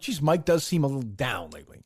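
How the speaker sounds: ordinary delivery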